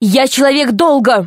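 sudden shrill, piercing, high changed voice. Harold Ivanovich answers Alice, suddenly switching to a loud, piercing voice. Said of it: "совсем другим, громким, пронзительным голосом".

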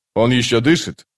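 ordinary talk

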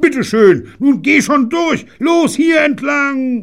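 very high, loud, shrieking scream. A man tearing at barbed wire until his hands bleed, screaming. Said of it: "und schrie".

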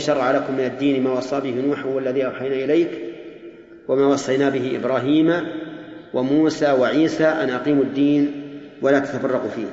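plain

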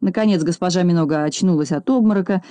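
ordinary delivery

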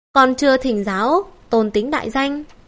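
ordinary delivery, nothing marked

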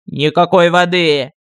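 loud, emphatic outburst. A character answers another who demands water before answering; exclaimed. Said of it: "воскликнул Артокс".

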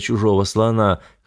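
ordinary delivery

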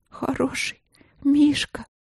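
high, quavering, trembling whisper. The princess speaks to the forest guest nuzzling her hurt knee; trembling whisper. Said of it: "Дрожащим голосом прошептала принцесса".

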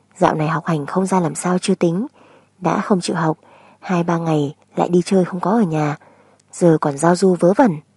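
ordinary delivery, nothing marked

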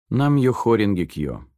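usual speaking voice

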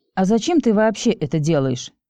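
plain reading voice

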